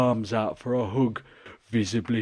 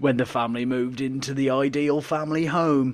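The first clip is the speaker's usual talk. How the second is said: put-on Northern Yorkshire accent; 2 semitones higher than usual. Asked to do a northern accent, reading a text aloud in a yorkshire accent. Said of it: "Yorkshire. There we go. I'm in".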